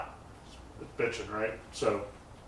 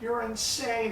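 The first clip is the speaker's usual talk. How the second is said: high-pitched hyper yell. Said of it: "He's just yelling at me".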